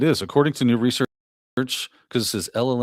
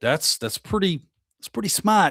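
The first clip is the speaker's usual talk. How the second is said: pitched-up, put-on Boston accent; 8 semitones higher than usual. Reacting to an AI scam story, quoting how Jerry would say it: Jerry's Boston accent. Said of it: "as Jerry would say in his B Boston accent".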